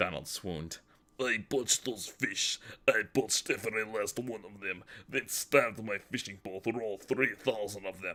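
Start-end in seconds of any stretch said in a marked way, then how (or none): 1.2-8.2 put-on uncharming Russian accent. Reading a story aloud, a character playing Vladimir: uncharming Russian accent. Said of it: "Donald spoke in a Russian accent".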